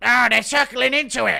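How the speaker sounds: very loud, high, rough, frantic yell. Imitating how a commentator reacts when fighters circle: imitating Michael Bisping losing his mind. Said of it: "Loses his fucking mind".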